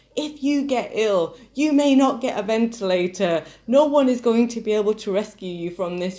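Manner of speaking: yelling. Retelling a phone call to mum in a supermarket aisle: imitating own yelling. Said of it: "just yelling at them".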